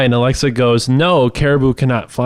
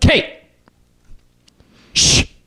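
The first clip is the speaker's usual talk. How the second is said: hushed shh, like a teacher; 11 semitones higher than usual. Retelling a nap-time story, imitating a teacher shushing. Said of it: "my teacher would be like".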